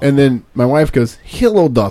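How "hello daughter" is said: playful, put-on Russian accent. Retelling how his wife answers their daughter's call, russian accent. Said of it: "having the entire conversation in Russian accents".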